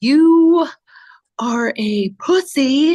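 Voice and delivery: slightly theatrical. Speaker shows the only way they can deliver a harsh line: slightly theatrical voice. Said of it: "in a slightly theatrical voice".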